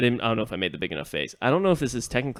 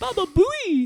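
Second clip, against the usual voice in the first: put-on lady voice, higher and louder; 6 dB louder than usual. Retelling what a lady in the party shouted: imitating a lady's voice. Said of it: "I thought a lady was in here".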